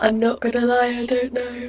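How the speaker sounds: speaking while yawning. Speaker answering a question on camera at nearly nine p.m., yawning. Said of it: "I'm yawning".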